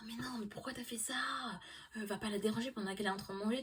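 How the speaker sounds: whispered, unvoiced, hushed scolding tone.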